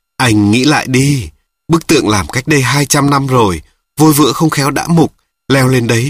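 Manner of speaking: plain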